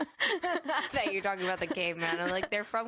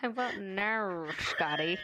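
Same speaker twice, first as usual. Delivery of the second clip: comic movie-villain impression; 3 semitones lower than usual. Speaker quoting a movie villain's line, attempting a Doctor Evil impression. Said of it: "I was going for Doctor Evil".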